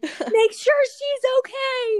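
play-acted very high, drawn-out yell, as if calling from afar. Retelling a mom calling across the beach: imitating a mom yelling. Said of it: "yelling at me from across the beach".

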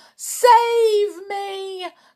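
very high-pitched cry. Reading the witch in the front row begging the grand high witch: cried out. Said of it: "cried the rich, wretched witch".

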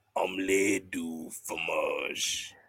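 put-on deep voice. Retelling a man's line, imitating his deep voice. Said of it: "but like in his deep ass voice".

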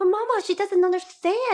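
high, loud protesting voice. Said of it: "Millie would be like".

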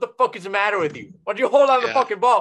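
put-on angry yelling. Acting out screaming at a cousin who drops the ball: imagined screaming at a cousin. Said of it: "I'm gonna scream at her and be like".

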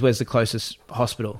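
plain

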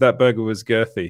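plain

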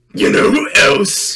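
very loud, slow, bellowed cartoon taunting. Doing a Muscle Man impression that was asked for. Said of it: "It's a Muscle Man impression".

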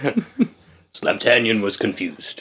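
seductive, sexy character voice. During a game, a player narrates their character's reaction: character voice. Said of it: "a character voice".

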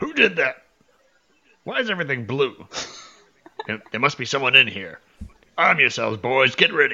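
booming, loud orc voice, barking shout. Narrating a tabletop game to the players, voice an unseen orc: yelling orc voice. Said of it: "you hear an orcish voice yell".

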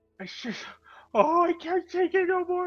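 sobbing uncontrollably. A companion answers the call to go help the others, sobbing uncontrollably. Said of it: "he starts sobbing uncontrollably".

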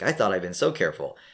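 plain

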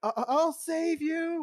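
shouting. In a tabletop game, a player's character runs to aid a fallen companion, yelling. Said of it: "I'm I'm yelling".

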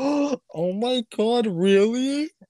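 very slow, high, drawn-out thrilled voice. Retelling own reaction to the good news: imitating own excited reaction. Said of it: "I was so excited".

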